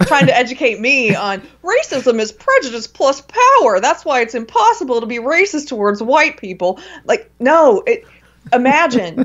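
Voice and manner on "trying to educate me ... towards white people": preachy, lecturing, know-it-all tone. Mocking people on Facebook new to the belief system, newbie SJW impression. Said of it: "your soccer mom impression?".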